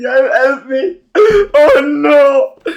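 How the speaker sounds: very loud, very slow, high wailing cry. Mocking horror-movie victims who fall and don't get up: imitating crying and screaming. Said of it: "stand there crying and screaming".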